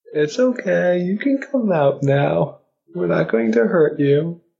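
put-on very high, cooing, swooping baby talk. A player coaxes cowering creatures to come out, in baby talk. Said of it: "They understand baby talk".

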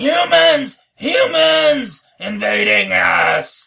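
very high, very loud, drawn-out creaky shrill hobgoblin holler. Hollering from the hallway in character to lure enemies: hollering in Hobgoblin. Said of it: "I'm hollering from the hallway".

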